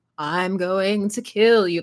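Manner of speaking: very slow, drawn-out, spooky ghost voice. A streamer shows the voice they'd use for a ghost in a murder game, ghostly spirit voice. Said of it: "That's the voice that we're getting".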